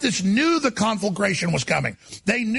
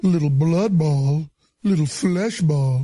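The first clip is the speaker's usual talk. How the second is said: put-on low, slow, drawn-out sweet southern US accent. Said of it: "trying to do an impression of Ralph Northam".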